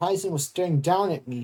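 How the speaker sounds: plain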